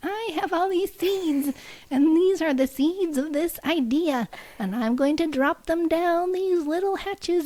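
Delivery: high, drawn-out voice. Speaker imitates how a man talks about his ideas: Keebler elf voice. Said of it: "this is how he talks... He's like a Keebler elf".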